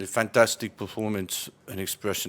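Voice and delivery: utterly bored, flat, level monotone. Asked to do a Jose Mourinho interview, a bored Jose Mourinho impression. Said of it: "You have to sound really bored to do Jose Mourinho".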